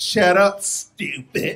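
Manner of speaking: snotty, sassy, contemptuous put-down tone with attitude. Imitating how they don't just say "stupid", with put-on attitude. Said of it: "they say it with attitude".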